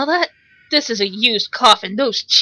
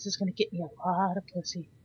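hushed, very soft, low murmur; 7 semitones lower, 19 dB quieter than usual. Comedy dub voicing someone's inner thoughts while painting, talking really softly. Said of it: "I bet if I talk really softly".

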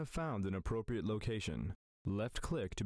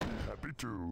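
put-on monster voice. Game unit answering an order to build another one, sounding like Cookie Monster. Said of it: "He sounds like a cookie monster".

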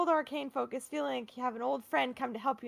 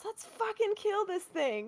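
high, in-character rallying battle yell; 8 semitones higher than usual. Voicing a character rallying allies in battle: character yelling. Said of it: "And she yells".

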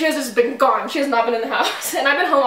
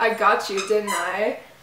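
eerie, unsettling, extremely creepy voice; 3 semitones lower, 3 dB quieter than usual. Retelling a stranger answering the phone, imitating a creepy voice. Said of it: "In like the creepiest voice ever".

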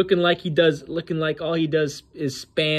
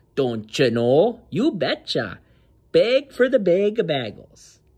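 put-on Minnesota accent held on every phrase. Mocking a fighter begging on stage: mock Minnesota accent. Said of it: "That's literally how people in Minnesota talk".

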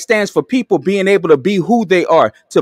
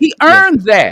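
shouting, higher; 9 semitones higher than usual. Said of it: "I'm sorry for yelling".

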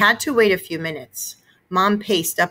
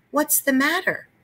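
light stage whisper, pitched up; 8 semitones higher than usual. Mrs. Rudder, having poked the narrator in the back, half-whispers to him. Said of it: "she whispered".

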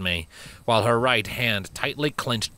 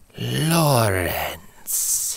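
low hissed voice. Narrator reads a woman repeating the human's name back: low hiss. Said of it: "she repeated in a low hiss".

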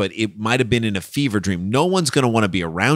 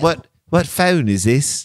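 poorly done put-on British accent; 4 semitones higher than usual. Imitating a suspect who fakes an accent: imitating a bad British accent. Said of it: "he's trying to do a British accent".

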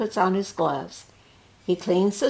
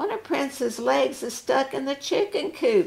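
high-pitched exclaiming cry; 7 semitones higher than usual. A daughter whose dog is trapped cries out to the doctor. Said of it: "she cries".

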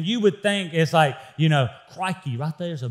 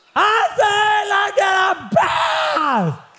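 very high, drawn-out, swooping shout; 4 dB louder than usual. Telling how the children finally get to their bath, retelling a yell at kids. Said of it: "I have to yell at my children".

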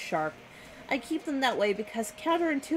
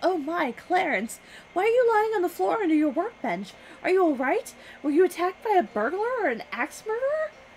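woman's voice caught on a gasp, pitched up; 7 semitones higher, 4 dB louder than usual. A narrator reads a woman's voice heard over a radio, gasping. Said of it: "A woman's voice gasps".

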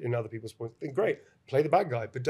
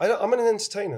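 ordinary talk

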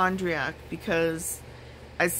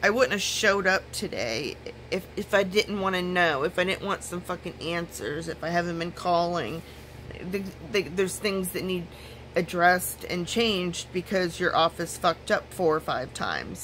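ordinary talk, nothing marked

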